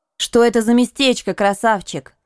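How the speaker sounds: sarcastic, sardonic tone. Just woken, she asks her companion about the place, sarcastic. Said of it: "Последние слова я произнесла с сарказмом".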